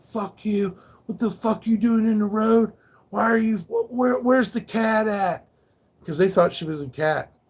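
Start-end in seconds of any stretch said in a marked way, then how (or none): 0.1-5.5 high, furious, angry screaming. Retelling how people reacted when he ran into the road: imitating people screaming at him. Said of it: "People were screaming at me".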